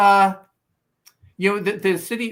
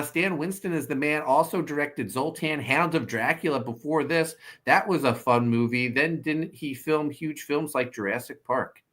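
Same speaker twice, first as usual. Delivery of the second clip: plain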